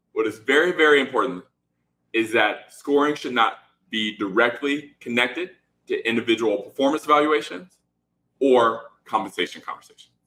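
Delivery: slow, deliberate, measured word-by-word emphasis. Stressing a key rule for founders: speaking slowly. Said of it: "I will say this slowly and twice".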